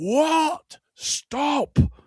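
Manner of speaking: high, loud shout with the first word stretched. Retelling how a man suddenly made everyone stop, imitating a shout. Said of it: "like this".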